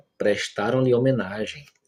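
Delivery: plain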